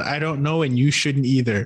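ordinary talk

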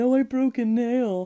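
slow, teasing, mocking little moan. Recalling an earlier remark about a movie character, retelling a mocking remark. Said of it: "I mockingly said".

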